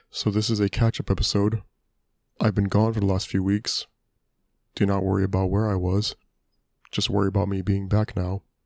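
mock flat, unemotional voice. Opening a catch-up podcast episode, in a Bobbi Althoff-style stoic monotone. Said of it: "where I just talk like this, really stoically and monotonously".

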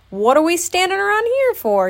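laughing, very high pitch, swooping. Reading a story aloud, Tigger charges out of the door, laughing. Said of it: "He laughed".

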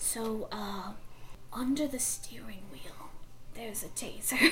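soft, hushed, secretive whisper.

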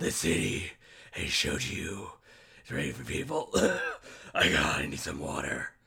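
deep, raspy, over-the-top voice.

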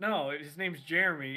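ordinary talk, nothing marked

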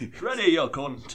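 thick put-on Cumbrian accent. Acting out what you heard a man billed from Newcastle say, in a really thick Cumbria accent. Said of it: "going like a really thick Cumbria accent".

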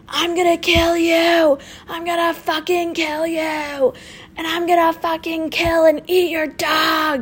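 menacing yelling, high and drawn out. Retelling a man yelling threats from across the street, retelling yelled threats. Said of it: "he starts yelling, he's like".

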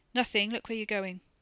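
plain reading voice

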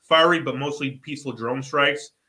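normal talking voice

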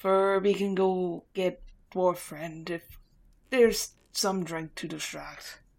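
put-on loud, growly voice with Scottish accent. Voicing Furby after the others recall the voice: deep growly Scottish Furby voice. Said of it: "It's a very deep Scottish person".

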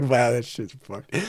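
put-on quiet laughing, chuckling and amused. Retelling looking back at the wrecked car: imitating own chuckle. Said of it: "chuckled to myself".

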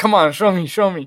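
mock pleading, imitated begging tone. Describing what someone does, imitating someone begging. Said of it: "you're basically just, like, begging".

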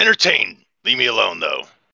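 monster voice with words ground out in a growl. Voicing a knoll who answers a player's invitation: growling. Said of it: "the knoll just kind of growls at you and says".

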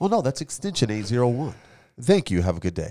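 phone agent service voice. Joking about call-center work, doing a customer service voice on a pretend call. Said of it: "my customer service voice".

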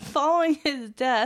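speech broken up by laughing. Reading an account aloud to another person, speaker is laughing while reading aloud. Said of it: "Why are you laughing?".

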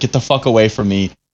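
ordinary talk, nothing marked

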